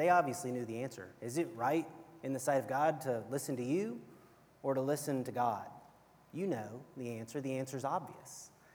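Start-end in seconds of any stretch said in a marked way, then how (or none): none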